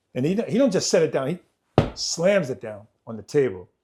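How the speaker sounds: normal talking voice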